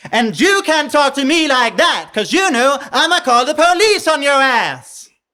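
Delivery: high, loud, aggressive forward twang.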